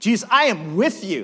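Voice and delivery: loud, belted, high-pitched Brooklyn swagger. Retelling a Bible passage, voicing Peter promising loyalty with Brooklyn swagger. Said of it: "like a Brooklyn swagger Peter's got".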